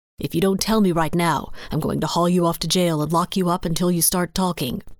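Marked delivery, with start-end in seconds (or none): none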